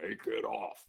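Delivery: put-on deep, gravelly voice. Retelling a man's order to the speaker, in a deep, gravelly voice. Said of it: "a very deep, gravelly voice".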